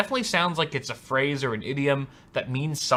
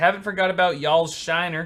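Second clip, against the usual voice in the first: plain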